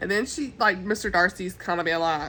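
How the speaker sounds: normal talking voice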